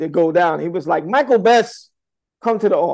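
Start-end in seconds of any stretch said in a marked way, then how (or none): 1.0-2.9 play-acted, stern, firm, high-pitched voice. Retelling how he was called to the office: imitating a firm call. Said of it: "it was firm enough to scare me".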